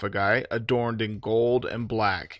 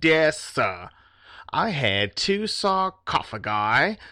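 very slow, pitched-up put-on Australian accent, words drawn out; 5 semitones higher than usual. Voicing a complaint to the delivery company about the package: Crocodile Dundee accent. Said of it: "Crocodile Dundee accent".

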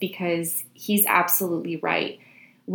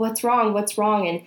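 ordinary talk

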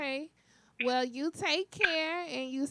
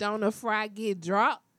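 loud, fake put-on Atlanta accent; 4 semitones lower, 5 dB louder than usual. Introducing the next interview guest, slipping into a fake Atlanta accent. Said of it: "That was my fake Atlanta accent".

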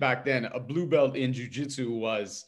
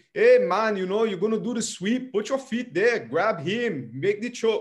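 very high-pitched, loud coach-style instructor voice; 9 semitones higher, 5 dB louder than usual. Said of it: "anyone who hits the".

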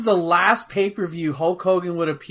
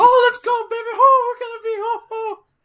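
very high, loud, hyped cartoon-mouse voice; 5 dB louder than usual. Mocking a wrestling manager's voice that sounds like Mickey Mouse: imitating Jimmy Hart's voice. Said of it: "He sounds like Mickey Mouse".

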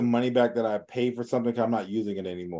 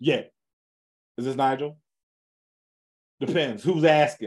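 aggressive, hostile, combative delivery; 3 semitones higher than usual. Showing how to answer a caller with one-word answers: aggressive phone answer. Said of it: "like real aggressive".

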